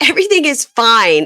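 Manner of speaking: loud, high, forced cheerful reassuring tone. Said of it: "she was like".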